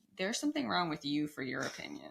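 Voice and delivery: ordinary talk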